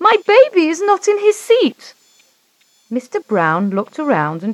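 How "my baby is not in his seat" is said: shrill, very high-pitched shout. A mother on a crowded plane looks down at the baby seat, shouting out. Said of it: "She shouted out".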